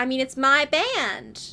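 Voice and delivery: fake American accent, loud, slow, drawn out. Retelling a scene where Pia pretends to be Polly to Miss Throckmorton; fake American accent as Polly. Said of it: "doing a fake American accent".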